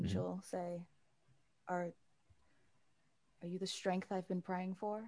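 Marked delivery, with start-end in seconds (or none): 1.7-5.0 voice catching a little, slightly choked up. Voicing Azar in a story scene as she replies, a little choked up. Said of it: "start to get a little choked up".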